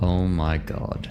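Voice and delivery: low mutter under the breath. Voicing a character's reaction in a game: muttering under his breath. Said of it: "He will say under his breath".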